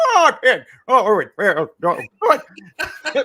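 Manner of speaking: very high, loud, swooping, drawn-out voice. Retelling being ten and imagining a cartoon character's voice: Mister Magoo voice. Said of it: "What would it sound like?".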